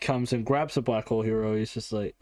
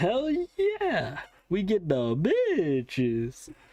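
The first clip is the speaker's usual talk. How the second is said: deliberate, very slow, high, drawn-out gliding voice; 7 semitones higher than usual. Quoting guys chatting about girls, in a weird slidey voice. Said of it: "I did that weird slidey thing with my voice on purpose".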